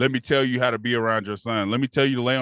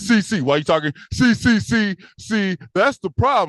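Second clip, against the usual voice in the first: halting, stammering wannabe OG voice, repeating "see"; 8 semitones higher, 4 dB louder than usual. Imitating a wannabe og who cuts you off: imitating a stuttering wannabe og. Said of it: "with your stuttering ass".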